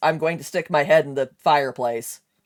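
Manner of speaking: ordinary talk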